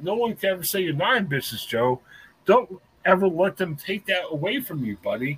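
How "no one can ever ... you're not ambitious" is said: usual speaking voice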